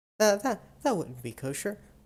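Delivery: high, rushed nervous laughing through stumbling words. Voicing a character who refuses a request: nervous laughing in character. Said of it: "laughs nervously and says".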